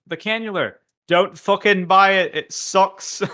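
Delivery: very high, very loud, slow, shrill bad British accent. Quoting a person from a video in a bad British accent. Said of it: "I do a bad, uh, British accent".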